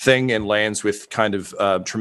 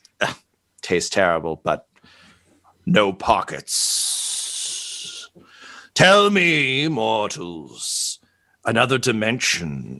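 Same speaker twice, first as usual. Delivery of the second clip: very slow, drawn-out, swooping dragon voice. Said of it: "It says".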